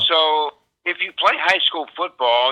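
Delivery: normal talking voice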